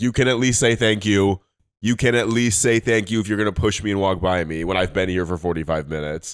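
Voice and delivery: play-acted, scolding, telling-off tone. Retelling scolding people who pushed past in a crowd: imitating own scolding. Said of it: "scolded some people that were in the crowd".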